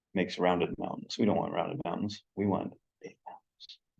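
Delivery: hushed, barely audible half-whisper. While adding big mountains to the scene on screen, half-whispering. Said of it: "I'm whispering for some reason".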